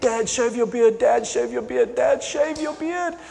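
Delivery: put-on high, pleading little kid voice, begging repeatedly. Retelling how his five-year-old daughter asked him again and again: imitating a begging child. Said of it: "begged me".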